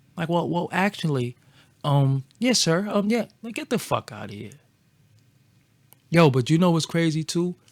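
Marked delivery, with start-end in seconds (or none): 0.3-2.9 put-on voice, spoken more slowly.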